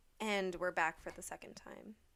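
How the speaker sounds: subdued, low-key, low and soft. Returning from a break to announce the show is back: subdued. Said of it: "a really subdued way of saying "we're back."".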